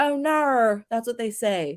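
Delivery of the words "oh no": put-on Australian accent, "no" said as pitched-up naur. Showing how people say no in Australia: Australian accent. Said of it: "that's how people say no in Australia".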